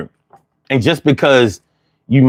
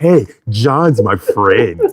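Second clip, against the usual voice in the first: close-up whisper, much lower and slower; 3 semitones lower than usual. Asked why he uses that voice, speaker shows whispering in your ear. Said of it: "I gotta say it like like I'm whispering in your ear".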